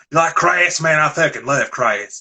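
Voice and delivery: put-on Southern accent of southwest Virginia. Imitating Metal Mike talking about punk bands: imitating Metal Mike's Southern accent. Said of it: "he's talking like this".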